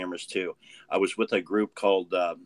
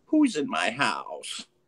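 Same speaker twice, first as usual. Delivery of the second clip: put-on raspy, gravelly elderly woman's voice; 3 semitones higher than usual. Speaker retelling a voice heard on a recording while home alone: gravelly old woman's voice. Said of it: "this gravelly old woman's voice go".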